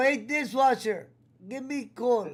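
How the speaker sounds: put-on Indian accent. Retelling a back-and-forth bit done on StreamYard: Servant Singh impression in Indian accent. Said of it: "doing our best Indian impression in Servant Singh".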